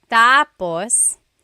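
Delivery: stress on first syllable of "tapos". Explaining how stress changes meaning, saying the word with stress on first syllable. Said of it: "When the emphasis is on the first syllable".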